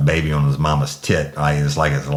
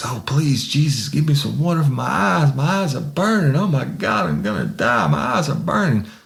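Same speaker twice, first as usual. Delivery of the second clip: very high, frantic, desperate pleading tone; 11 semitones higher than usual. Retelling a pepper-sprayed man's words, imitating someone begging. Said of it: "the begging phase".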